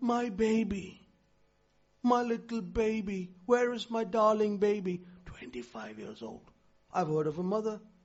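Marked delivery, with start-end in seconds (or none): 0.0-5.0 put-on doting voice, slower. Retelling how a mother talks to her grown son, imitating a doting mother. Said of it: "And you still say".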